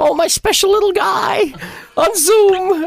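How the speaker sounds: bad put-on voice with pitch pushed way up. Attempting a Marge Simpson impression on the spot for a game card. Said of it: "I can't do her voice".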